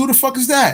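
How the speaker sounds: high, alarmed, startled yell.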